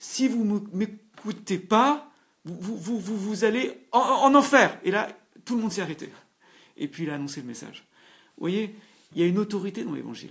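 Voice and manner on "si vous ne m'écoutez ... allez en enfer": put-on stammer, higher, louder, slower. Retelling a man preaching to passersby in an underpass, imitating a stammer. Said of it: "tout en bégayant".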